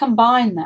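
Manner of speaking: plain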